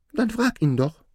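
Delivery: insistent, prodding, urging tone, very high-pitched. Aladdin's mother pushes him to ask the dwarf, urging. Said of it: "drängte seine Mutter".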